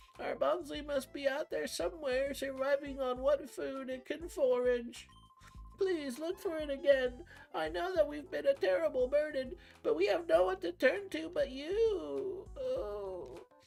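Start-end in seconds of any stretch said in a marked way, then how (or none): 0.2-12.5 put-on old man character voice, much higher and louder. Voicing a character asking someone to look again for Bugsley, old man voice. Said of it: "The old man from The Simpsons?".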